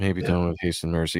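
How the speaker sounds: mock listless, going-through-the-motions, lackluster flat delivery. Retelling how a character said a line: imitating a lackluster delivery. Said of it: "the way he says it is just like".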